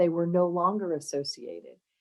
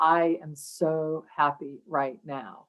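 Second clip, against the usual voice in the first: slow, flat, emotionless deadpan monotone. Imitating a TV sergeant character from a show: imitating an emotionless monotone. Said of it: "he is very emotionless".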